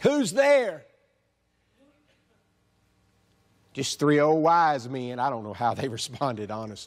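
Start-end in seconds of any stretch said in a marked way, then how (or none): 0.0-5.2 put-on very high-pitched voice with Southern accent. Speaker acting out an imagined exchange at a door, in a put-on southern accent. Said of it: "In that southern slang that I'm sure she had".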